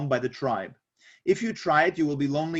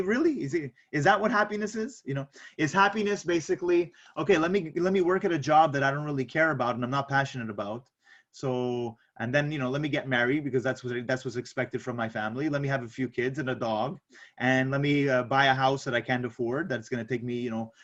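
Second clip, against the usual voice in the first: normal talking voice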